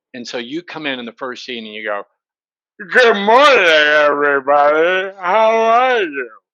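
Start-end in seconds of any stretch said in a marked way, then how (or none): 2.7-6.2 put-on very slow, tipsy-drunk delivery. Showing an actor playing a drunk character too obviously: acting drunk. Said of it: "your character says your character is drunk".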